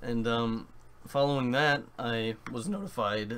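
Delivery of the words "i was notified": voice cracking suddenly mid-phrase. Explaining how they heard about a game release, voice cracking. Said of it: "that voice crack right there".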